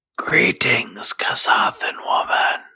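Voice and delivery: speaking in a whisper. In character, greeting a Kasathan woman quietly: whispering. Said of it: "I'm trying to whisper".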